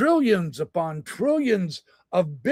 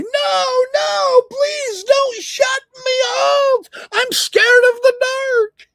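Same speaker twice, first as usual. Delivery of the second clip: very high, loud, drawn-out pleading squawk; 6 dB louder than usual. Speaker mocks the idea of an AI begging not to be turned off; mock squawking plea. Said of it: "my A I isn't squawking at me".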